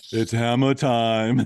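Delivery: big, loud, punchy movie-style catchphrase delivery. Quoting a line from a movie in an Arnold voice. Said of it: "Why do you sound like Arnold?".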